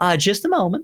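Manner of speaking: very high-pitched siren character voice. Voicing a siren excusing herself from a conversation: Esther's accent. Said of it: "that's not her accent".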